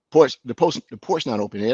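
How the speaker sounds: ordinary delivery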